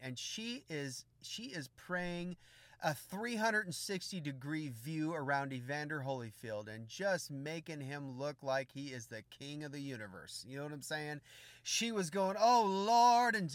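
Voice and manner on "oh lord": loud, high-pitched, shouted, fervent cry. Retelling how an intercessor prayed aloud: imitating a woman shouting a prayer. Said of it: "shouting it at the top of her lungs".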